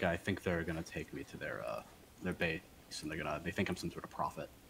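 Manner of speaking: very low, hushed whisper. A player's character speaks to the others in the game, whispering very low. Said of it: "I'm like whispering very low".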